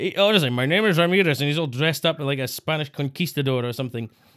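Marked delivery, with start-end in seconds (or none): 0.5-1.4 put-on Scottish accent held throughout. Mocking a Highlander line: Sean Connery impression. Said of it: "sounds like Sean Connery pretending to put on an accent".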